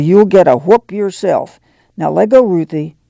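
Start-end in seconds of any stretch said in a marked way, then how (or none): none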